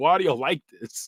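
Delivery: normal talking voice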